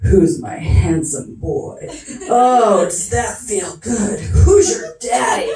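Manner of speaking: low, slow, sultry, sexy, seductive voice. Imitating him talking to their dog Cody: mock-sexy low voice. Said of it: "he gets his voice all low and sexy".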